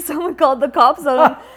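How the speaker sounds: high, loud laughter through the words.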